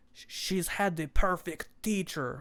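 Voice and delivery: horrible, overdone put-on Russian accent. Quoting a russian dude's line, in a horrible russian accent. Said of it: "my horrible Russian accent".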